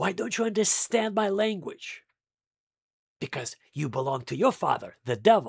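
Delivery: stern, angry, harsh tone. Retelling words spoken at the temple to its leadership: retelling an angry rebuke. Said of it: "with angry voice".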